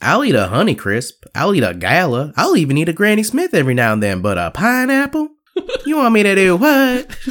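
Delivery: very high, swooping, caricatured voice.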